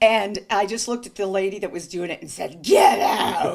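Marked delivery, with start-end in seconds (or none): 2.6-3.6 loud, possessed demon voice. Retelling telling a nurse to leave: The Exorcist possessed voice. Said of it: "I turned into, like, The Exorcist".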